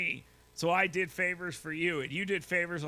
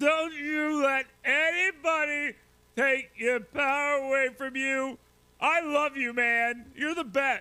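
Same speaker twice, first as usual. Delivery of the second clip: put-on slow, drawn-out, loud, gushing drunk voice; 8 semitones higher, 5 dB louder than usual. Mocking a played clip by imitating its speaker: mock drunk Kamala Harris voice. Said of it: "Like someone drunk in a bar".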